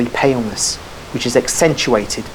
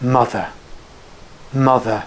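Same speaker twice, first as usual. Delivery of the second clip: words let out on a sigh. Weak with fever, he says a name kept in his heart, low murmur like a sigh. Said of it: "He murmurs it in a low voice, like a sigh".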